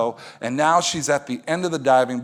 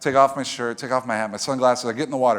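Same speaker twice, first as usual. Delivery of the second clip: ordinary delivery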